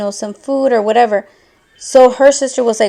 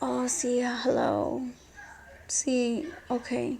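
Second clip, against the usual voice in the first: hushed, very soft, slow, drawn-out fake sleepy voice; 2 semitones higher, 17 dB quieter than usual. Retelling answering mom's call outside, imitating own fake sleepy voice. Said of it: "me hice la pendeja, que estaba dormida".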